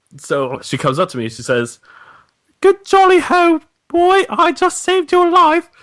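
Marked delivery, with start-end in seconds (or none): 2.6-5.6 very high put-on voice, pushed way up. Acting out a made-up story scene: Emma Watson impression. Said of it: "first this is Emma Watson".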